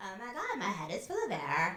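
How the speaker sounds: put-on full, loud, swooping valley girl voice. Leading a breathing exercise, demonstrating the phrase in a valley girl voice. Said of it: "talk like you're a valley girl".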